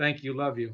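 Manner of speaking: fighting back tears. Signing off a call with thanks: holding back tears. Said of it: "I'm trying to do this without crying".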